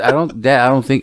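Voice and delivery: normal talking voice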